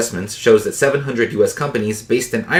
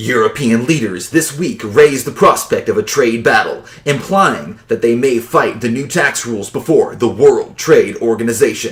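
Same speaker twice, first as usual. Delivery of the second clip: heavy, theatrical, exaggerated dramatic reading; 3 dB louder than usual. Reading aloud a first sentence that sounded dramatic, in a really dramatic voice. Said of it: "I want to read this first sentence in a really dramatic voice".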